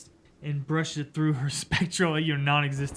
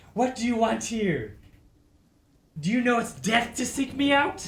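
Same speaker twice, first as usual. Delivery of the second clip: high, snarled, hostile tone; 8 semitones higher than usual. Narrating a spectral woman confronting mortals who seek her out: snarling. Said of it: "She snarls".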